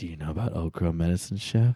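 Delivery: whispering. Acting out a bar scene, leaning in to a girl: whispering in someone's ear. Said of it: "I'm just gonna whisper in your ear".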